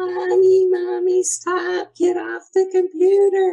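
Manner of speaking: put-on shrill, very high, loud child's scream. A parent retells what her child screamed in her ear, imitating a child screaming. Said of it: "she was literally screaming".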